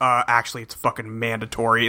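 mock abrupt deadpan, dead-serious, dropped very low. Retelling a cartoon boss's line about the gadget test: imitating Jerry turning super serious. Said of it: "turns super serious and goes".

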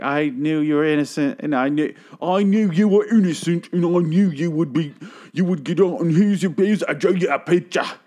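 exaggerated, over-the-top British accent, high-pitched. Retelling a scared woman handing over a picture she drew: over-the-top British accent. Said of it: "the most over-the-top British accent".

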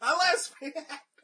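mock shocked, high, loud laughing outcry.

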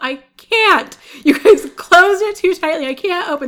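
very high, drawn-out, muffled-sounding shout. Describing a film outtake, mimicking a man yelling through a stuck window, retelling someone yelling. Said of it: "yelling through the window".

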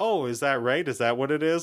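plain

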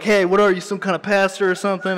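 laid-back, casual, too-cool, nonchalant tone. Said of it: "really cool, like, whatever".

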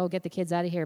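ordinary delivery

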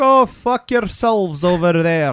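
bad Irish accent, loud. Retelling a beat cop refusing a bribe, bad Irish accent as Clancy. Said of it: "it sounded like a Scottish person trying to do an Irish accent ... I mean you".

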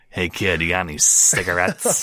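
put-on old smoker lunch lady voice. Trying out voices for a character, in an old smoker lunch lady voice. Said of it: "like an old smoker lunch lady".

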